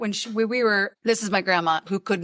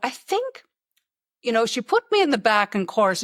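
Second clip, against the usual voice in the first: bad, horrid put-on Irish brogue. Retelling what a grandma said about being put at the back in chorus: horrid Irish accent. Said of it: "a horrid Irish accent".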